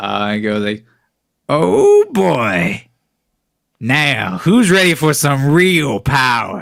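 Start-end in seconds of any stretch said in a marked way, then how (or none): 1.5-6.6 high, loud, swooping, drawn-out voice. Voicing a returning character who offers real power: Crazy Clay voice. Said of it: "you hear a voice you haven't heard since, like, episode two".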